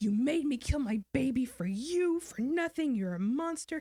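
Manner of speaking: put-on furious scream, full of grief and anguish. Retelling confronting a man who had conned her, retelling a scream. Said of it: "I just screamed at him".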